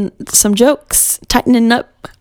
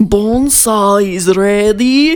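put-on Russian-accented voice; 2 semitones lower than usual. Teasing an actor whose accent changes, quoting Bonesaw in a Russian accent. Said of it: "At first, he's Russian".

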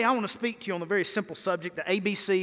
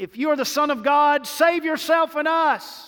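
loud, high-pitched hollered yell; 8 semitones higher, 7 dB louder than usual. Retelling Luke 23, voicing the thief on the cross: retelling a yell. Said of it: "he's yelling".

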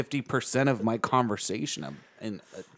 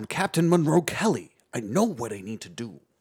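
superior, above-everyone, haughty delivery; 4 dB louder than usual. Imitating how an actor talked all through a movie: Ernie Hudson movie voice. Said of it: ""I'm above you" accent".

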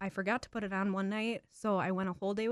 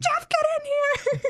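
shrill, very high, loud, drawn-out scream; 11 dB louder than usual. Retelling calling someone in after her shower, retelling her scream. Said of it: "screaming at Siri to call Jeff".

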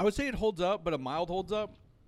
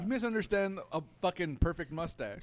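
usual speaking voice

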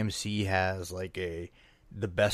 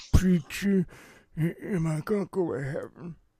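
very high, slurred, slurping, jawless-sounding speech; 10 semitones higher, 4 dB louder than usual. Imitating a character asking a preacher about heaven, slurred voice with slurping sounds. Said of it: "you gotta get the slurping sounds in there".

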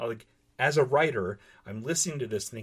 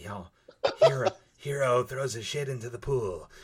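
imitated high, breathy narrator voice. Mocking a reader's unnatural reading voice, high breathy narrator voice. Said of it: "higher pitch, breathy, pulpy sound".

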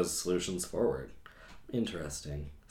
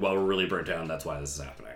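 mock flippant sarcasm, lower and faster; 2 semitones lower than usual. Recalling an earlier remark about the team's burnout; retelling a sarcastic remark. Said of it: "I kind of said that really sarcastically and flippantly".

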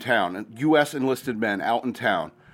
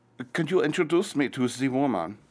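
fake put-on German accent; 3 semitones higher than usual. Recounting enlisted guys asking about a woman, put-on German accent. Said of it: "let me get in the headspace of a German accent".

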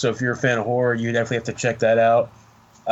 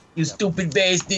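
Yiddish accent, much higher; 8 semitones higher than usual.

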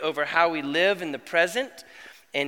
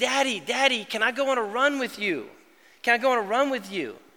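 put-on high, pleading, nagging little child's voice; 5 semitones higher than usual. Retelling how the youngest son begs to come along on a run: imitating a begging child. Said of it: "he begs me".

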